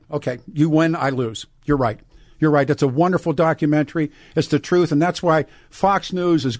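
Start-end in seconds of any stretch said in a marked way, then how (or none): none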